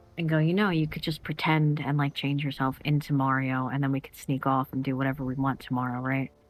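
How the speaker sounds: hushed, leaning-in half-whisper. Leaning over to Lilith in character, half-whispering in character. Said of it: "lean over and whisper to Lilith".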